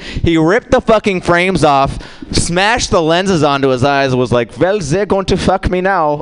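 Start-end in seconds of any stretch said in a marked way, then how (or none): 4.6-6.2 put-on Dutch accent. Retelling a story, acting out a man's words in a put-on accent for an audience. doing a dutch accent. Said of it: "try and do my Dutch accent".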